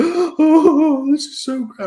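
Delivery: very high, slow, weepy, tearful gushing. Retelling a video of a fan reacting to a trailer: imitating a crying fan. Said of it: "he's fucking in tears. He's like".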